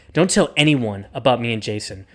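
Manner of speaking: mock menacing, threatening tone. Acting out a line said to Clark in a retold scene: mock-threatening. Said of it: "say that in like a threatening manner".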